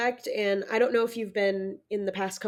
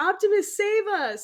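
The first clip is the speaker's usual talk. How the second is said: very high, thrilled, excited screaming; 10 semitones higher than usual. Retelling what you always shout on a motion simulator ride, retelling screaming at the screen. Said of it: "I'm like screaming at the screen".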